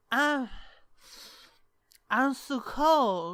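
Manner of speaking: put-on sloppy, very slow, slurred, acted drunk voice. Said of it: "they're both fucking sloppy-ass drunk".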